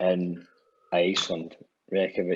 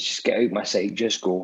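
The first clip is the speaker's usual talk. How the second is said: ordinary talk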